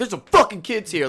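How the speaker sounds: play-acted aggressive swearing. Retelling how his dad yelled at people at sporting events: imitating his dad aggressively cussing. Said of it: "being real aggressive and cussing at them".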